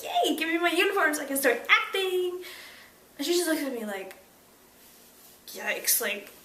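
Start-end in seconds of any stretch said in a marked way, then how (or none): 0.0-2.4 put-on thrilled, can't-wait, really excited eagerness. Retelling how she asked the wardrobe lady for her uniform: imitating her own excited voice. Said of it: "really excited".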